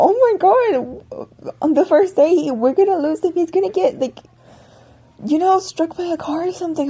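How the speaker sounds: put-on, high, frantic, scared panicked rambling. Retelling fearing the cat gets hit by a car: retelling freaking out. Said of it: "I'm freaking out 'cause I'm like".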